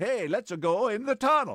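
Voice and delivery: put-on Norwegian accent. Acting out someone suggesting a tunnel trip: put-on norwegian accent. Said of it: "I love your Norwegian accent there".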